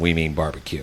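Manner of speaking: WE emphasized in we mean barbecue.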